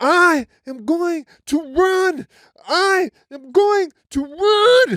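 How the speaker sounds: very high, tearful crying shriek, run drawn out. Speaker recalling physical therapy, quoting own past words before running, reenacting own screaming and crying. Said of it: "And I'm like screaming and crying".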